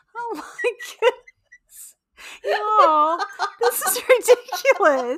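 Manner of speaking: very slow, high, drawn-out talking through laughter. Reacting to a funny detail in the story, laughing while talking. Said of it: "I do not know why I'm so laughing at this".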